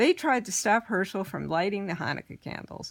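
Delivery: ordinary delivery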